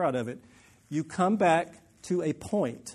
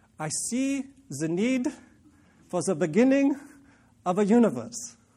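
terrible put-on German accent, slow, drawn out, high; 5 semitones higher, 3 dB louder than usual. Einstein speaks after looking through the telescope, done as Einstein in a terrible German accent. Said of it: "That's my terrible German".

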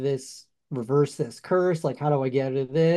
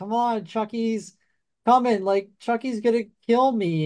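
mock pleading delivery, high-pitched; 8 semitones higher than usual. Retelling a Chucky movie scene where Andy begs the doctor, imitating Andy pleading. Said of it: "he's like pleading to the doctor".

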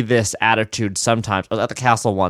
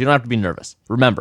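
imitated aggressive speech. Retelling what a woman told a nervous performer after the show: imitating aggressive speech. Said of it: "she said this in a very aggressive way".

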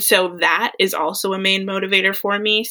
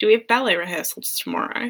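put-on Australian accent; 3 semitones higher, 4 dB quieter than usual. Asked to try one, a speaker repeats a given line: Dance Academy impression. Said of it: "Can you can you do one?".

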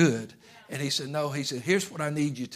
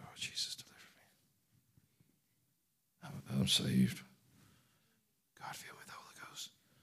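hushed, breathy, barely voiced whisper; 10 dB quieter than usual. Showing how a saved person need not speak of deliverance: mock whispering. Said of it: "you don't have to whisper".

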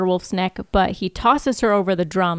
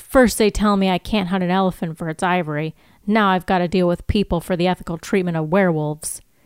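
ordinary talk

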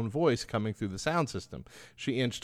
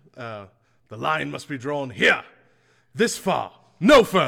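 very loud, booming, commanding captain-style proclamation; 9 dB louder than usual. Recalling a line he almost said, the speaker does a Jean-Luc Picard impression. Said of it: "So that's what I was channeling".

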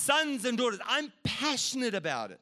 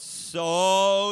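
stressing the word so; 4 semitones lower, 7 dB louder than usual. Quoting John 3:16 about God's love, stressing the word so. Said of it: "emphasis on so".

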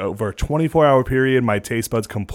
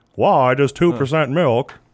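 put-on old man voice; 2 semitones higher than usual. Showing their own version of Jerry: old-sounding Jerry Seinfeld impression. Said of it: "my Jerry Seinfeld's like".

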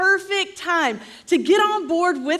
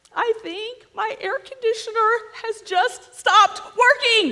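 quavering, trembling, frightened voice; 4 semitones higher than usual. Speaker acting out coming home to a hot house, trembling voice. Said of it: "with a tremoring voice we say".

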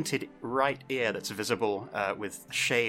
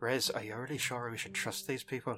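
discreet, lowered, hushed voice; 2 semitones higher, 6 dB quieter than usual. A role-play character turns toward Riz to speak, in a lowered voice. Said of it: "lower my voice".

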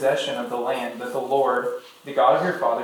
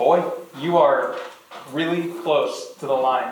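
usual speaking voice

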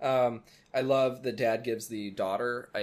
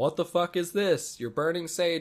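put-on, alarmed, high, freaking-out outburst; 6 semitones higher, 3 dB louder than usual. Retelling how the parents reacted on coming home: imitating parents freaking out. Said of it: "and they're freaking out".

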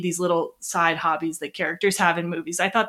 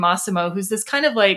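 usual speaking voice

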